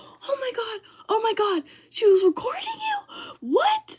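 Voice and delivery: mock freaking-out voice, very high, swooping, drawn out. Retelling mom's reaction to hearing about the recording, imitating a mom freaking out. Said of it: "And my mom starts freaking out".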